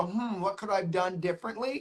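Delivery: ordinary talk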